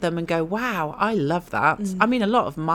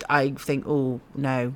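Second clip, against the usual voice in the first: usual speaking voice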